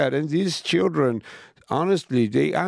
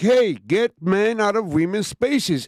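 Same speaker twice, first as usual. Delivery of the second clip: put-on screaming, higher; 4 semitones higher than usual. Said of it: "are standing there screaming".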